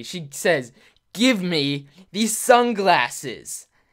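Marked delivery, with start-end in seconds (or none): 1.1-3.6 very angry, threatening, slow and raised voice. Retelling how a girl threatened her twelve-year-old self with a plastic knife: imitating an angry threat. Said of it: "real angry".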